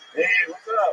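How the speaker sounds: casual, podcast-host style delivery. Doing a Joe Rogan impression after being mistaken for him. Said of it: "I think we found the fourth impression".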